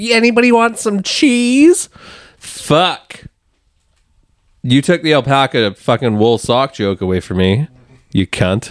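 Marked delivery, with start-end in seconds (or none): 0.0-1.9 very high, homespun Wisconsin house-mom voice. Mocking paddlers on the river, imitating a Wisconsin house mom. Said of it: "they sound like a Wisconsin fucking house mom who's like".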